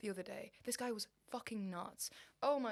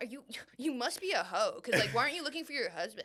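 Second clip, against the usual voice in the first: put-on American male accent, louder; 5 dB louder than usual. Retelling a podcast, imitating American podcast men. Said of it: "American men being like".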